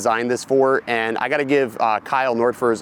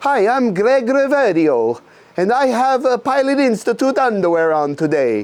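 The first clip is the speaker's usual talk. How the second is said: put-on French accent, voice pitched very high; 11 semitones higher, 4 dB louder than usual. Running through intros in different voices, doing Greg Reverio with a French accent. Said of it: "He's French".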